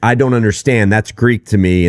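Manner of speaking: normal talking voice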